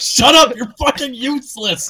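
high, rowdy, jeering mock shouting. Retelling what viewers shout in chat at side characters: imitating chat shouting. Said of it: "everyone just shouts out".

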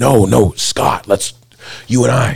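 mock high, stretched-out, drawn-out mild yell. Retelling calling out an opponent before a fight: retelling own scream. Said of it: "I'm screaming".

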